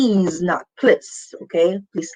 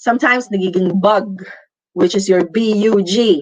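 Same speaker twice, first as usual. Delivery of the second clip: usual speaking voice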